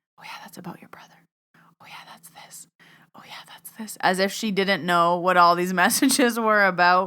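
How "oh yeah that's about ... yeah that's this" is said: rapid, very quiet whispered asides. Retelling whispering to a friend during a reading, retelling own whispering. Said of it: "there's me like whispering like".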